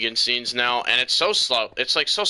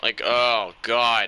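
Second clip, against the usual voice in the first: plain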